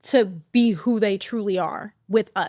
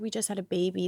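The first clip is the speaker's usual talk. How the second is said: tearful, crying voice, quieter; 8 dB quieter than usual. Retelling what she said on the phone: imitating someone crying. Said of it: "I remember her crying on the phone".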